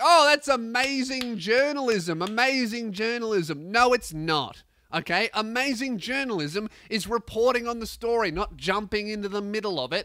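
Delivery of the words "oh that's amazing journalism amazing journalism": put-on starry-eyed, gushing, fawning admiration. Mocking people who praise a reporter: mocking imitation of fawning praise. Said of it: "everyone's like".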